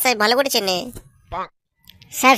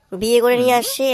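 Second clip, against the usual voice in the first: plain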